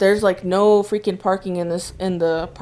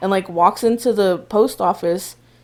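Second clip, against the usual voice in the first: ordinary talk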